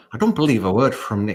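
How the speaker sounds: Irish accent attempt, Dutch-tinged. Reading a line aloud after being asked for a dutch irish accent. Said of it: "If I read this Dutch Irish".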